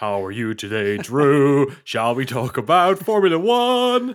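loud, swooping, put-on American accent. Joking with another speaker about what Singlish means: put-on American accent. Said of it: "you singlish in American accent".

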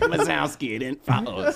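slimy cartoon creature voice. Answering what Roz says, imitating Roz from Monsters, Inc. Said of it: "It's like".

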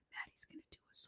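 hushed, secretive, conspiratorial whisper. Retelling what a mom on a TV show said to other moms: whispering. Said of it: "Why are you whispering?".

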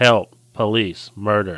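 put-on sarcastic voice. Retelling a movie scene, quoting Wonka: sarcastic Wonka line. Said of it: "Wonka sarcastically says".

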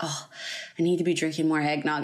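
mock muttering. Speaker retells what she muttered while walking around the house, muttering under her breath. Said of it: "muttered under my breath".

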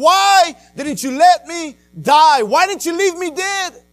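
acted-out scream. Speaker retells screaming at god while upset: retelling screaming at god. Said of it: "I'm screaming at God and saying".

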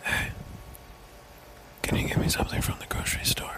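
speaking in a whisper. Acting out the choice of only whispering for life: whispering. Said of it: "only be able to whisper".

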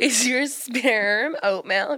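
put-on Los Angeles Valley girl accent, pitched high. Joking reply during banter, in a put-on Valley girl accent. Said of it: "What is this American accent? ... I'm trying to be a Valley girl".

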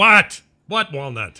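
groggy annoyed grumble. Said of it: "and I go".

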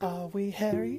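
high, wailing ghost voice.

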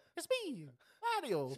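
squeaky, very high-pitched put-on Italian accent. Joking that the villain sounds like Mario: Mario voice. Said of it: "It's the Green Mario".

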